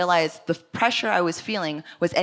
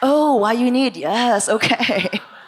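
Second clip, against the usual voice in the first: put-on lady voice, pitched higher; 5 semitones higher, 6 dB louder than usual.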